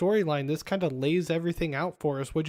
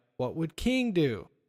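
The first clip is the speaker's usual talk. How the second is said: ordinary delivery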